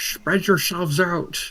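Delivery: loud, high-pitched yelling. After seeing two allies shatter nearby, yelling to the group: yelling to the group. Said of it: "I just yell out to the groups".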